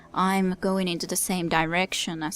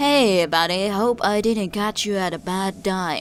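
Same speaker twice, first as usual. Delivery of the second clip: put-on drunk, giggly, cheery, louder; 6 dB louder than usual. A man leaves a recorded phone message greeting an old buddy, hoping the timing is not bad; drunk and giggly. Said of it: "He's drunk. / He's drunk. / He giggles, / [name], Runner. / He's drunk. / He giggles, / Your Whitphone rings".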